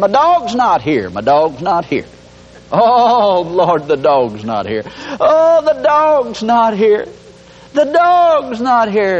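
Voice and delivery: slow, high, drawn-out groaning moan. Acting out someone sitting on a doorstep all morning, mock moaning and groaning. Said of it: "you moan and groan all morning".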